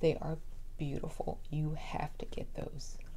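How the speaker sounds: soft, unvoiced whisper.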